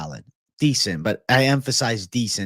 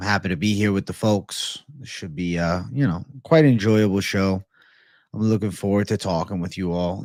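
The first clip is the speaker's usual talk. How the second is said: flat, level monotone with low energy; 3 semitones lower than usual. Greeting the chat at the start of the show, a little monotone. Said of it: "If I seem a little monotone".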